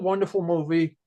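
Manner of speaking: normal talking voice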